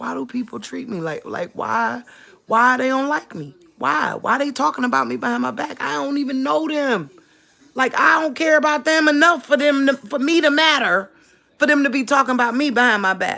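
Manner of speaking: mock crying, tearful, high pleading voice. Retelling standing at the table asking the husband why, imitating own past crying. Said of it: "crying, like".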